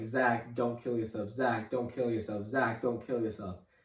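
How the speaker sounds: mock sobbing, crying voice. Retelling a brother's sobbing phone call: imitating someone sobbing while pleading. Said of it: "He is just crying so hard".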